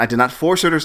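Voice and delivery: ordinary delivery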